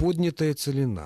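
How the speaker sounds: поднятая with stress pulled to first syllable ПО.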